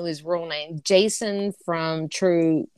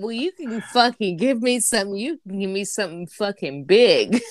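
plain

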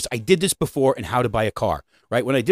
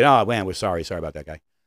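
insincere, careless, offhand, unserious tone, lower pitch; 5 semitones lower than usual. Showing the wrong way to apologize for a failure: insincere offhand apology. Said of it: "Don't just make it".

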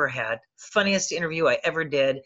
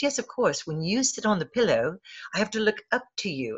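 put-on little British accent, lightly put on; 2 semitones higher, 4 dB quieter than usual. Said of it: "in her little British accent".

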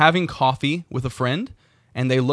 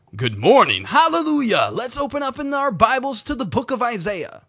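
very high, golden, swooping radio-announcer voice; 10 semitones higher than usual. Mocking how preachers change in the pulpit, speaker does a golden radio announcer voice. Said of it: "transformed into a golden radio voice announcer".

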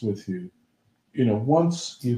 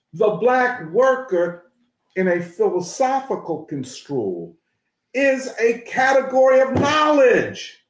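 very high, raised, excited voice; 11 semitones higher, 4 dB louder than usual. Discussing a book's philosophy with another speaker, raised voice. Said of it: "Excuse me for raising my voice".

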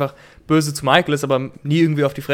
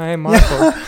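slower, put-on flat monotone voice; 2 semitones higher, 5 dB louder than usual. Describing a TV scene, the speaker imitates how Toby says it: monotone Toby impression. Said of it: "extrem monoton".

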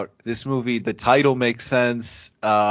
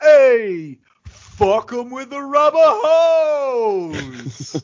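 very high, loud, stretched-out, drawn-out delivery; 13 semitones higher, 6 dB louder than usual. Doing an impression of a sitcom catchphrase: John Travolta impression. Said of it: "That's a pretty accurate impression".

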